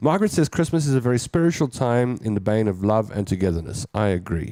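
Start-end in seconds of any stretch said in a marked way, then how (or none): none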